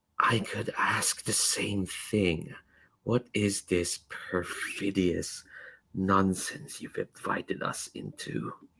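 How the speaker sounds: soft, slow, hushed, carrying whisper. Voicing Garena as she lowers the rifle in a cathedral, whispery voice. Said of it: "in a this like whispery sort of voice".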